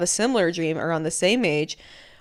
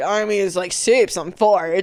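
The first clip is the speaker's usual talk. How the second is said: put-on frat boy voice. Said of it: "talks like that".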